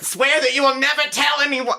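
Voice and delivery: high comic ghost voice. Imagining the ghost's line done by Jon Lovitz: Jon Lovitz voice. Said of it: "if it's Jon Lovitz".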